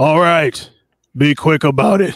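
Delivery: high hobgoblin voice, calling out. The narrator voices a hobgoblin answering from far across the way: hobgoblin shouting back. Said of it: "you hear a hobgoblin shout back".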